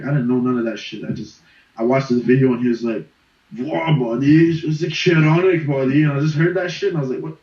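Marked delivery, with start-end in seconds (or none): 3.6-6.0 very slow, drawn-out put-on Persian accent. Imitating a funny Persian YouTuber's accent: imitating a Persian accent. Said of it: "with the accent".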